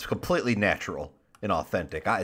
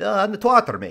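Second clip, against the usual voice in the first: very high voice with every R rolled throughout; 11 semitones higher, 3 dB louder than usual. Explaining what V is known for, doing a V impression with rolled R's. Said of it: "you got to roll your R's".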